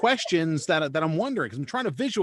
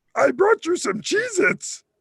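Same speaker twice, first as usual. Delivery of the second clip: horrible high-pitched puppet voice; 12 semitones higher, 4 dB louder than usual. Quoting a woman's silly line to the listeners, in a high-pitched Grover-esque Muppet voice. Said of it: "in this horrible, high-pitched, Grover-esque Muppet voice".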